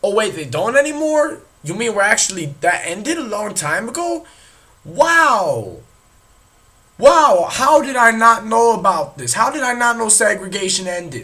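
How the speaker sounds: mock astonishment, heavy sarcasm. Pretending not to know segregation ended: sarcastic mock surprise. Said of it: "That was sarcastic".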